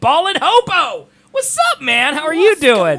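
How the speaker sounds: very high voice swooping way up. Greeting a returning viewer, voice going very high. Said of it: "My voice got very high right there".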